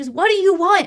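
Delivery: put-on yelling, loud and high-pitched. Retelling a film fight scene at her car: imitating Noah yelling. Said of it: "yelling at her".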